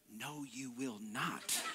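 very soft, quiet, slow mutter under the breath. Retelling what his wife said to him: imitating speaking under breath. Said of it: "she says to me under her breath".

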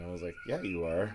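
ordinary talk

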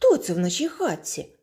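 sudden, called-out exclaiming. A dwarf coming home sees a light in the house, exclaiming. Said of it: "вигукнув Веселун".

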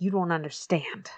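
put-on impassioned outburst. Retelling how Quincy argues with the stadium management: imitating Quincy passionately. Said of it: "super passionate and he kinda, like".

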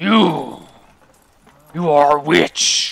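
slow, halting, broken creature-like speech. Voicing a snarling creature accusing a player: halting broken speech. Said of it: "says in a, a halting common".

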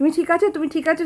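high, urgent, worried voice.

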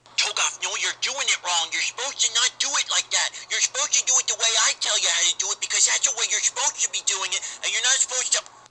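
very loud, high, stock nerd voice. Selling a ringtone to the audience and performing its sample: Toegoff Nerd Voice ringtone. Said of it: "the Toegoff Nerd Voice ringtone".

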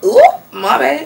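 put-on slipping into own accent. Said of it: "my accent comes out".

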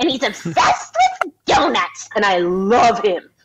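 bouncy, sing-song little cartoon cat voice. Describing a role they played in a show, demonstrating the Iru cat voice. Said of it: "he sounds like this all the time".

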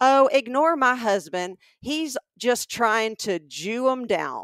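very robust, loud voice, carrying far. Retelling a customer's wife calling across the store to the saleswoman: imitating a very robust voice. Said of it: "in a very robust voice".

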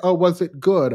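plain

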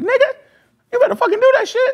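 furious voice, very high-pitched and angry. Retelling a phone call with his manager: imitating Hex's high-pitched mad voice. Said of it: "He has this real high-pitched voice when he get mad".

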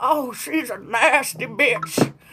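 put-on old granny voice, very slow and drawn out. Retelling a remark someone made about a woman, in an old granny voice. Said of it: "Why is it gotta be in the granny voice?".

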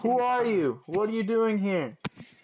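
high, loud, demanding, challenging tone.

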